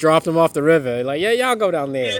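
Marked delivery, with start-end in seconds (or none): 1.2-2.2 put-on mix of southern, Brooklyn and Boston accents. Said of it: "It's a southern Brooklyn Boston".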